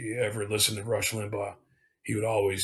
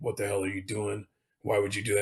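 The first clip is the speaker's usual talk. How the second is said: put-on slightly tipsy, drunk-sounding speech. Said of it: "always calls me up a little bit tipsy".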